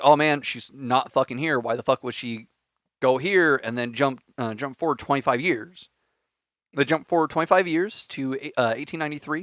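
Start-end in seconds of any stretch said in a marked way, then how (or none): none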